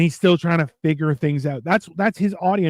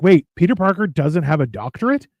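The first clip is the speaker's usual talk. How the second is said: normal talking voice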